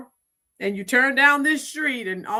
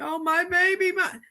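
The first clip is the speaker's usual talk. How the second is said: mock crying, higher; 6 semitones higher than usual. Mocking a crying mother who had been out protesting: mocking someone crying. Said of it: "So why are you crying?".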